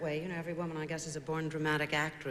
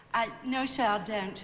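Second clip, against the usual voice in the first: put-on English accent, higher pitch; 6 semitones higher, 6 dB louder than usual. Replying to someone addressed as sir, in a put-on English accent. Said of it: "that English accent, is that, uh, that's a put on".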